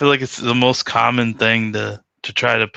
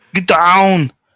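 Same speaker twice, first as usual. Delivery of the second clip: put-on Austrian accent, higher and louder; 8 semitones higher, 7 dB louder than usual. Doing an impression after saying every accent attempt turns into it: Arnold Schwarzenegger impression. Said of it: "it sounds like Arnold Schwarzenegger".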